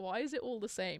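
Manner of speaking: ordinary delivery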